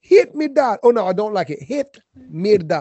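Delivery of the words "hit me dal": put-on Jamaican accent, very high and loud. Joking about how a place's name sounds, saying it in a Jamaican accent. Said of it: "it sounds like a Jamaican person saying".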